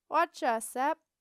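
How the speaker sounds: bright, cheery, very loud voice. A voice from under the desk greets an arriving apprentice, cheery voice. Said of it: "a cheery voice came from under the desk".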